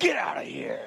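strange, unearthly, otherworldly voice. Retelling a wife's words in a hospital room: otherworldly voice. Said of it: "in another otherworldly voice said".

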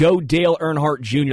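normal talking voice

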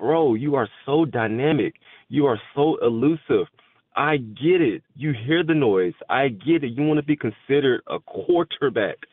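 put-on mild half-shout, held in. Speaker reenacting what they screamed at the quarterback, retelling a scream. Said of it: "I was just screaming like".

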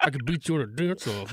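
muttered under breath. Recalling being beaten up, the speaker repeats what they muttered under their breath. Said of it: "I muttered under my breath".

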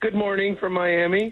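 happy voice, full of joy. A guest calling in by phone greets the morning show hosts: joyful. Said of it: "I love to hear that joy in your voice".

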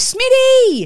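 very high, loud calling out. Retelling how a man at the checkout called to a friend down the aisle: imitating someone calling out. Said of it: "So he calls down".

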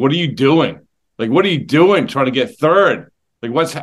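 ordinary talk, nothing marked

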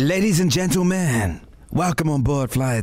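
put-on American accent. Asked for their best American accent, the speaker plays a flight announcer: put-on American accent. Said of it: "do your best American accent".

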